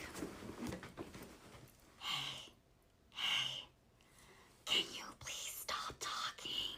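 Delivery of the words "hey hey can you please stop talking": quiet whispered voice. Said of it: "I had to lean over and be like".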